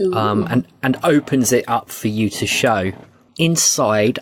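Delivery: ordinary delivery, nothing marked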